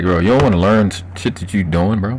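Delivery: ordinary delivery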